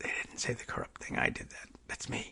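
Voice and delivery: very soft, unvoiced whisper.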